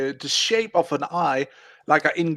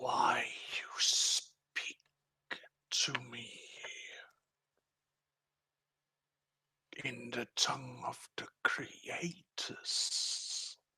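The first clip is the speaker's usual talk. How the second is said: slow whisper in an ancient-sounding voice; 4 semitones lower, 16 dB quieter than usual. Voicing a rock creature that questions a player: voice old as time itself. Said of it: "you hear a voice old as time itself".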